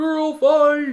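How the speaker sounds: put-on high, loud college frat boy scream. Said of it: "some college frat boy line to come out and scream".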